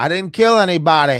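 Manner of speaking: very loud, high-pitched comic voice, belted out. Quoting how an actor says a line while filming, in a Madea-like voice. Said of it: "sounds like Tyler Perry Madea when he says anybody".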